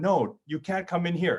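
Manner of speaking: mock little girl voice, yelling. Retelling a four-year-old niece yelling at a doll: imitating a yelling child. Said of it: "she yells out".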